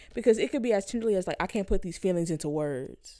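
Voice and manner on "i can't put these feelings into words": usual speaking voice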